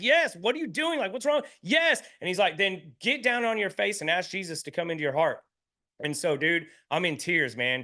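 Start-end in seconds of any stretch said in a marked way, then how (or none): 0.0-2.0 very high, furious, angry scream. Speaker retelling struggling to get free of someone holding him, retelling being mad. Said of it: "I'm like mad at him".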